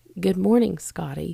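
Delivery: put-on soft, quiet voice. Retelling a greeting said while sneaking up on someone: imitating own quiet greeting. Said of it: "But I said it like that".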